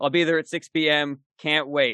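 emotionless, flat, deadpan monotone. Showing how someone always says their text out loud, deadpan. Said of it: "It's always deadpan".

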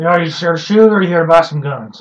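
stiff speech through a jaw stuck in place. Retelling meeting Gunny at the shooting range, Gunny voice with jaw stuck. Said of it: "he's talking like he's got like his jaw stuck in one place".

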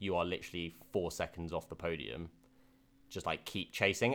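normal talking voice

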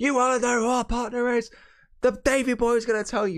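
very high, camp and cheesy shrill shouting. Retelling a wrestling backstage segment, imitating someone shouting. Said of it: "the amount of shouting".

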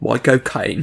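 flat, drawling Cockney accent. Showing the easiest way to do an impression: Michael Caine impression. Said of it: "you've got the accent down".

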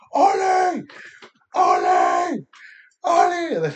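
very high, very loud swooping yells at top of lungs. Retelling screaming for a lost child by name, retelling a scream. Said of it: "I started screaming on the top of my lungs".

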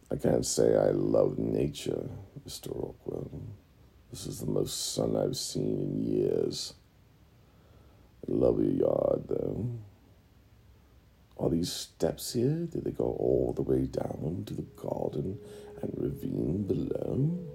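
menacing, sinister goblin cave-creature voice. A goblin looking over a house speaks to Mr. Rockwell, monotone sinister goblin voice. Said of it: "their voice is very potentially monotone and sinister".

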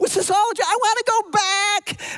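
acted-out scream. Acting out waking from a dream in character: acting out a scream. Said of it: "I screamed that".

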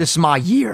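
voice cracking. In a casual chat, speaker talks about his plans, voice cracking. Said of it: "Welcome to Voice Crack City".

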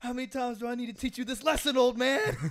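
loud, high-pitched yell. Retelling yelling at a dad who did not understand something: imitating own yelling. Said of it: "yelled at him".

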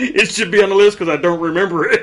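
high, loud laughing through the words. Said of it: "I'm laughing".

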